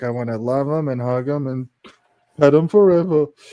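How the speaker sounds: cartoonish yeti monster voice. Recalling a cartoon scene, quoting the Abominable Snowman: Abominable Snowman voice. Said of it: "the Abominable Snowman one with, uh, with Bugs, where he's like".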